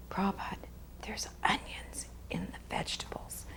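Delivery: hushed whisper, barely voiced, very quiet. Retelling how a devotee leaned over at a meal, retelling a whisper. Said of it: "He whispers it".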